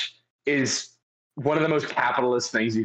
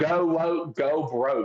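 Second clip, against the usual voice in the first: put-on, slow Southern drawl; 4 semitones higher than usual. Retelling a video in which a musician mocks a brand: imitating a fake Southern accent. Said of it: "with his, like, fake Southern accent".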